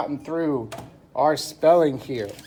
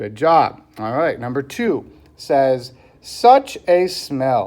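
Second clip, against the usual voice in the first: usual speaking voice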